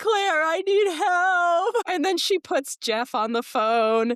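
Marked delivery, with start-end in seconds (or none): 0.0-1.7 very high crying, words drawn out long. Retelling calling Claire for help that night, retelling crying. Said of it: "And I crying on the phone and I'm like".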